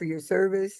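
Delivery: ordinary talk, nothing marked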